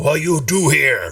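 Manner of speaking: goblin voice with broken, mangled grammar. Voicing a goblin who speaks broken Common to the party: goblin speaking broken Common. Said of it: "in broken kinda common".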